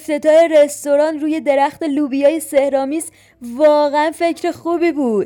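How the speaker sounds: ordinary delivery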